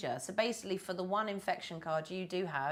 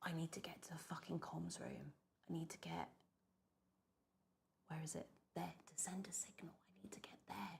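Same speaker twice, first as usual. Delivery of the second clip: hushed, quieter whisper; 15 dB quieter than usual. Talking candidly to the audience while he leaves the room, whispering. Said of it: "sorry, I'm whispering".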